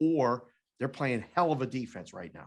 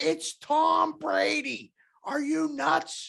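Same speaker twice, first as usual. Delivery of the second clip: put-on scream, higher pitch; 4 dB louder than usual. Retelling a coworker's objection to the betting line: imitating someone screaming. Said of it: "he kept screaming in the corner".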